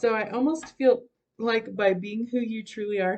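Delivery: talking through hiccups. A tarot reader interprets cards for a viewer, hiccuping. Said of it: "sorry, I have hiccups".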